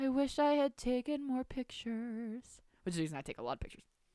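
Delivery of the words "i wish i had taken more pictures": put-on sad, sorrowful, downcast, regretful tone. Retelling what a classmate said about college, retelling a sad remark. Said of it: "Princeton sadly goes".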